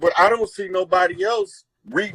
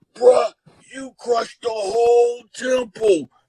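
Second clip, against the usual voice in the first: rough, rasping, put-on voice; 4 semitones higher than usual. Recounting meeting Hardil after a heated debate, imitating Hardil's raspy voice. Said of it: "he got this raspy voice".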